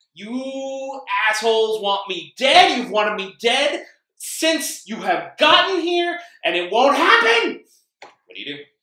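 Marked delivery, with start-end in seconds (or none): 0.2-7.7 very loud, very high, shrill, rising furious yell. Game master voices the warden pointing a shotgun at the group, pissed, yelling. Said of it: "so you arrive right outside the warden's office where he is standing there with a shotgun held in one hand and a bottle of Jack in the other. / and every now and then he makes sure to point that shotg".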